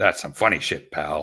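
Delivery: put-on laughing voice. Imagining Vince McMahon at a comedy show: Vince McMahon laughing. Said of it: "he's probably laughing, going".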